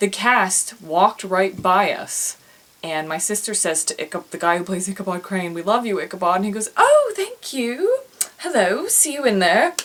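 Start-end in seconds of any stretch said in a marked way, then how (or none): 6.8-9.7 terrible put-on British accent, very high, swooping. Retelling how a British actor from a loved show greeted fans in a hallway, in a terrible British accent. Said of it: "It's a terrible British accent".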